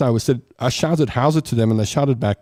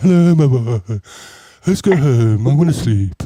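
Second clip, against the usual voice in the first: put-on sedated-sounding voice; 3 dB louder than usual. Imitating eighties mothers picking kids up from school: imitating stoned mothers. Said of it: "All the mothers were stoned".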